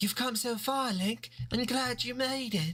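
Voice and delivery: put-on British accent. Voicing a female character who greets Link, put-on British accent. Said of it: "I gotta do the British accent since that's what she canonically has".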